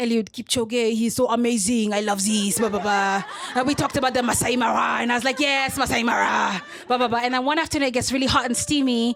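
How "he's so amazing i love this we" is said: put-on French accent, much slower. Retelling chats with a man imagined as French, in a put-on French accent. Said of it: "[FRENCH ACCENT]".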